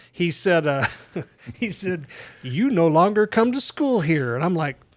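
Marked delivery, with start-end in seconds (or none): 2.4-4.4 play-acted, high, loud, gleeful, relishing delivery. Recalling the principal waiting for him at the school building, imitating a gleeful principal. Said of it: "with much glee in his voice".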